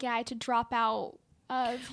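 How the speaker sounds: usual speaking voice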